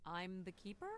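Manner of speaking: hesitant, doubtful tone. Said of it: "Say it like you mean it".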